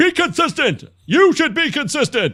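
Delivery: very high-pitched, shouted yell. A speaker in a two-person conversation, yelling. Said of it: "Sorry for yelling".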